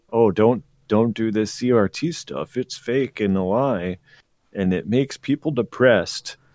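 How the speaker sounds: ordinary delivery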